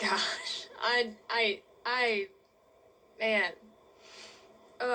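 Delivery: very slow, halting, stumbling voice overcome with feeling. Describing a huge tornado outbreak, struggling for words: getting emotional. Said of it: "I get emotional talking about it".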